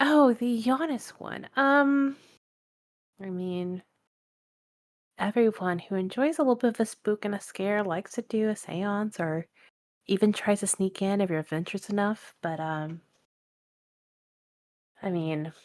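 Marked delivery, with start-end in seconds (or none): 0.0-12.3 coy, playful tone. Voicing Luna answering about seances: coy. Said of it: "trying to, like, you know, be coy about it".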